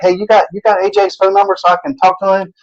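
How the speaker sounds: nervous, fretful, worried, high anxious voice. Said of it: "he was so, so worried".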